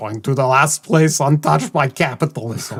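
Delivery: put-on Soviet general voice. Quoting a video game line as an impression: Tim Curry impression. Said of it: "I'm just doing Tim Curry impressions".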